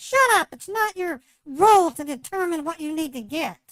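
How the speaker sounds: loud, angry yell. Speaker retells how they shouted at him over his car question; mock angry yelling. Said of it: "Why are you yelling at me?".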